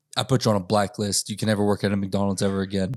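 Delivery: plain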